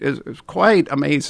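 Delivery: ordinary talk, nothing marked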